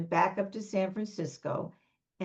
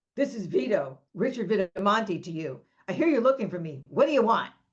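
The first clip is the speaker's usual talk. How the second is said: rough, rough-edged voice. Retelling a phone call at home, imitating Vito's rough voice. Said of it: "it's a rough voice".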